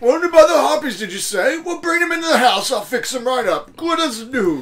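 put-on voice of an elderly man. Answering someone whose owl friend was wounded, in an old man voice. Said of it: "put that kind of on the old man voice".

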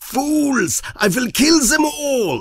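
acted-out, crazed, very high mad-scientist scream. Describing an old movie's crazed professor beside his weapon, imitating a screaming mad scientist.

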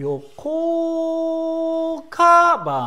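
pitch peaks high on ka, then drops away. Explaining the Japanese pitch accent of ryokō kaban: high pitch on ka, then drop. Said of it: "ここで「か」がねあの高いところにいてそこから落ちるんですよね".

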